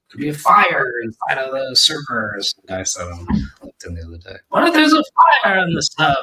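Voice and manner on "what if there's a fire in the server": very high-pitched, raised put-on British accent. Quoting someone from LinkedIn about a server fire: British accent. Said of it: "That was my British accent".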